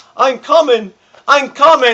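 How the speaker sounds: mock, high, loud braying yell.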